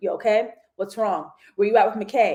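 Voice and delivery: mock deadpan robotic monotone. Retelling how a man in a show spoke to a woman, deadpan robot voice. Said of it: "he turns into this deadpan robot".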